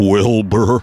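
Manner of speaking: put-on talking horse voice. Podcast host describing the talking horse does his line: Mister Ed voice. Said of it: "he would talk like this".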